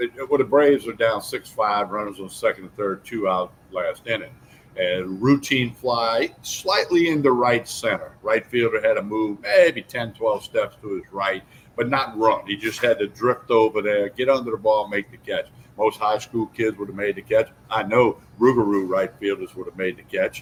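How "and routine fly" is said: routine stressed and stretched very slowly. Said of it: "I emphasize the word routine".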